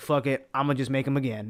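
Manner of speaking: ordinary talk, nothing marked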